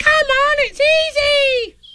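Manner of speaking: very high, easy, slow drawn-out squeak. Urging a friend inching along a tree branch: squeaking. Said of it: "Squeaked Roo".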